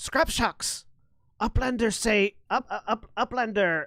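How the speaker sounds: high-pitched goblin creature voice. Voicing a goblin calling out from off to one side: goblin voice. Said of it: "the goblin sort of looks at you quizzically".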